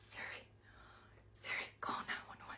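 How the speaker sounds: soft whisper, barely voiced. Retelling a story, the speaker acts out trying siri again: retelling a whisper. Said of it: "I'm whispering like".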